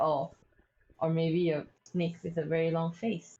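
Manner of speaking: low, muttered, under the breath. Voicing a character making a joke: under the breath. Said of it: "I just say it under my breath".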